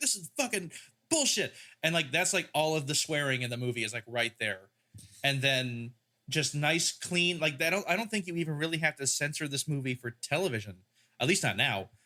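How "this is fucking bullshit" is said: put-on, pitched-up drill-sergeant style shouting. Retelling a movie scene where the sergeant shouts at everyone: imitating a sergeant shouting. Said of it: "he's just, like, shouting".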